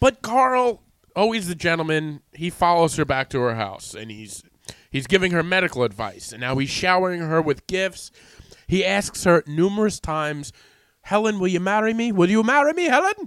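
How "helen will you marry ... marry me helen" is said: poorly faked German accent. Retelling a man repeatedly proposing to a woman, as Carl in a bad German accent. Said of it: "I'm trying to do a German accent".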